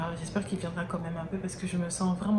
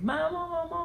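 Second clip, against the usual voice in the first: put-on high child's voice crying out. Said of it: "que j'entendais mes enfants crier".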